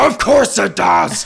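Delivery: loud, rough, huge demonic bellowing voice. Retelling a woman's retort to another woman, bellowing in Beelzebub voice. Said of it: "bellows in her best Beelzebub voice".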